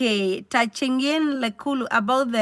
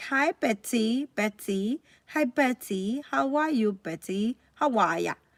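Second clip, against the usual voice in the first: mock British style, quieter; 6 dB quieter than usual. Comparing greetings in the UK and here, imitating a British greeting. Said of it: "in U K they will be like".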